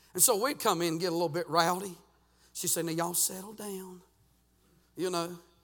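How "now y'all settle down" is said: imitated sweet, soft-spoken voice, quieter. Retelling how a small English teacher calmed rowdy boys: imitating a sweet, soft voice. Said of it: "she had a real sweet, soft voice".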